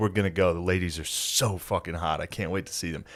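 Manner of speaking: giddy, thrilled, gushing, can't-wait excitement. Retelling a show where a guest was stoked: imitating an excited fan. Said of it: "He was stoked that Lady Boys were coming".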